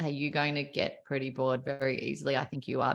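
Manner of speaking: flat, dull delivery. Teaching a class about pace and tone, demonstrating a boring monotone. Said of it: "I talk to you like this".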